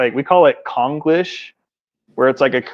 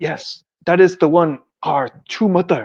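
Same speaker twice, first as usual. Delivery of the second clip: put-on Korean accent with preachy sermon cadence; 4 semitones higher than usual. Speaker imitates their old overseer giving a sermon, in a fake Korean accent. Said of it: "but they have a Korean accent".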